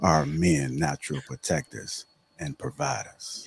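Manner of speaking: switched-up, unhurried voice. Repeating a discussion question to the group in a different voice. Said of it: "Let me say it in my different voice".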